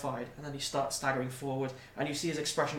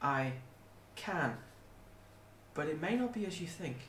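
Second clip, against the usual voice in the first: very small, tiny, soft, slight voice; 2 semitones higher, 5 dB quieter than usual. Narrating a fantasy scene, voicing the dragon's reply in a tiny, small voice. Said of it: "A tiny voice erupts from the dragon. Very small, very slight".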